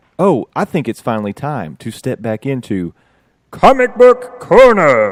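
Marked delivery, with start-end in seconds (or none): 3.5-5.1 very loud, booming, swooping, grand heroic announcer voice. Announcing the return of the Comic Book Corner segment: attempted heroic voice. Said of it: "every time I try to go heroic".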